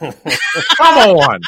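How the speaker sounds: very loud, high, drawled southern voice. Imitating how a friend says come on: imitating Davey's southern drawl. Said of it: "The best is whenever Davey says".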